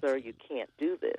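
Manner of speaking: normal talking voice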